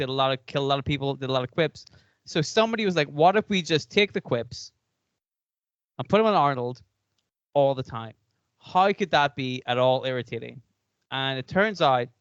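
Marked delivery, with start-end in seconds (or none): none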